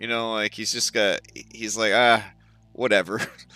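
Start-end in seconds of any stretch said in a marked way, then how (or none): 1.9-3.2 put-on carefree attitude. Picturing a fellow player as a carefree type: imitating Eddie, unbothered and breezy. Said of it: "I just picture Eddie as sort of like this".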